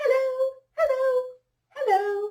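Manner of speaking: very high, top of the pitch range. Leading a group voice exercise, saying hello as high as possible. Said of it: "Let's say hello as high as we can".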